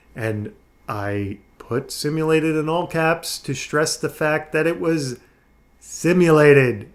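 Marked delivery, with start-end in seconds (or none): none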